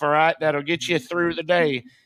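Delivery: put-on parody old-timer voice. Retelling what the old guys in sobriety tell you: mocking imitation of sobriety old-timer. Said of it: "I'm mocking that now".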